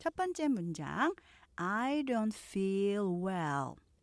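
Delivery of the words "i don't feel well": very slow, careful model reading. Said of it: "제가 느린 속도로 발음하는".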